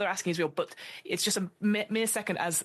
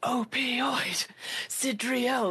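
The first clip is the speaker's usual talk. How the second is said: high shout from far across a large space; 5 semitones higher than usual. Describing the audience at a match: imitating the crowd shouting. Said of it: "shouts all the way across the".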